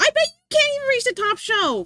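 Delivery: strong, punchy, forceful voice, very high pitched. Asked by another speaker to say the line again in a strong voice: strong voice. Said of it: "Str- strong voice".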